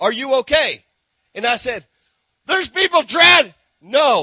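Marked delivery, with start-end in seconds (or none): 0.0-0.8 put-on halting broken English with a foreign accent. Retelling a lifeguard's question to him, in broken english. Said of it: "he says in his broken English".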